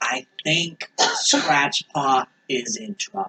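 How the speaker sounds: hushed whisper. Narrator voicing a lizard man who speaks to the players, whispering. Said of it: "and he whispers to you".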